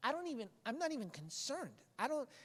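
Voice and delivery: high, taunting voice. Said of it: "the writer is taunting death. He's like".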